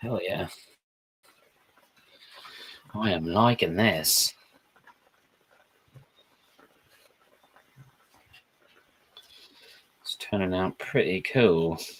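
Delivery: bad, clumsy, low, put-on British accent. Reacting to something turning out cool, in a bad British accent. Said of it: "I'm doing the British accent now".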